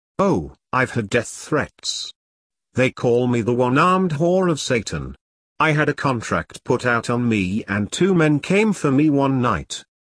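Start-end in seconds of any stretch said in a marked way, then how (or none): none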